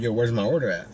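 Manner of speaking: ordinary talk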